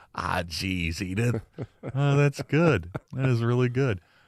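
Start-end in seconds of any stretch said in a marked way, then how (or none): 0.2-1.4 low, soft grumbling character voice, under the breath. Caller explaining why every car he owned was named Edith, Archie Bunker voice. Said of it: "in my best Archie Bunker voice".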